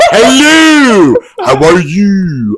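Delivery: over-enunciated, very slow, swooping, theatrical, "you" drawn out. Mocking how a wrestler talks in promos now: imitating Mercedes Moné, over-enunciated. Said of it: "she's like George Takei".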